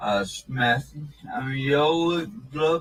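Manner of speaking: mumbled hard-to-understand words. Answering an officer who asks his name: slurred, hard-to-understand speech. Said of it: "I still have no idea what he said here".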